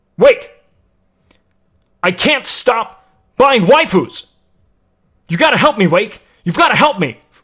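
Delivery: blaring robot-like monotone. Show how he talks, addressing Wake, with a very loud, almost robotic Lacari impression. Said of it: "He talks like this".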